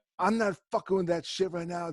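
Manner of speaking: mock, toned-down, mild screaming yell. Retelling a friend screaming over a phone speaker: imitating a friend screaming. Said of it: "the other guy screaming on".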